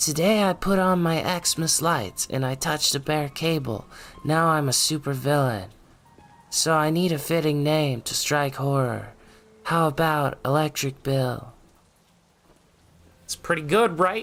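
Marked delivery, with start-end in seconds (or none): 0.0-11.5 pitched-up, synthetic text-to-speech reader voice. Reading a viewer's super chat aloud, in an ai text-to-speech voice. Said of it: "do the, like, A I voice thing myself".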